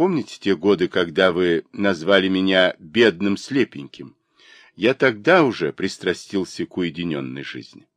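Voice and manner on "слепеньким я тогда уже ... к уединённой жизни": ordinary delivery, nothing marked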